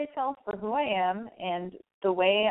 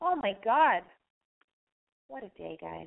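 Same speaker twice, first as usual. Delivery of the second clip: raspy, hoarse voice. Wrapping up a call and greeting listeners: raspy voice. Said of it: "but my voice is raspy".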